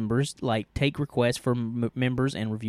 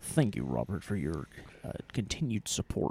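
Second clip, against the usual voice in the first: creepy voice, much lower and quieter; 6 semitones lower, 10 dB quieter than usual. Repeating a thank-you to a questioner named robert, creepy voice. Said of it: "That sounded creepy".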